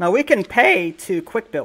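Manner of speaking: voice breaking mid-line on the words. Speaker narrating their building choices in a game; voice cracking. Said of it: "my voice just cracked".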